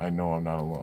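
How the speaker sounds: ordinary delivery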